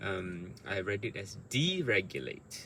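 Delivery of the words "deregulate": first syllable de of deregulate given stress. Recalling how they read a word aloud: stress on DE in deregulate. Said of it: "I wanted to emphasize D".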